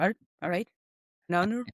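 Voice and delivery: put-on thick, broad Cork accent. Retelling an awkward goodbye with a hard-to-understand teacher, thick Cork accent. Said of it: "he had a very thick Cork accent".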